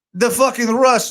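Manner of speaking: failed put-on Russian accent. Trying a different accent after giving up on another: failed fake Russian accent. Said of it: "I can't do it either".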